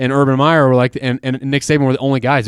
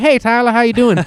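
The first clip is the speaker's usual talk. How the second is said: put-on charming, higher Southern accent; 10 semitones higher than usual. Imitating a coach greeting someone on arrival: Mack Brown impression with Southern accent. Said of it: "that kind of Southern accent specifically that Mac Brown has".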